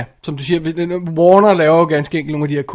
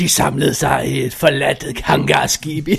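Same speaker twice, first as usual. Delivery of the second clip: put-on dramatic narrator voice. Recalling a film retelling, the speaker mimics its dramatic narrator voice. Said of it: "sådan en dramatisk fortællerstemme".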